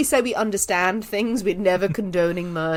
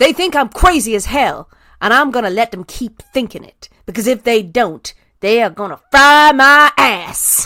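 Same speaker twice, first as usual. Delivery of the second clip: very loud, generic Southern US accent; 3 semitones higher, 9 dB louder than usual. Speaker asked to read a highlighted section aloud, crazy Southern lady accent. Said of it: "in your best crazy Southern American lady accent".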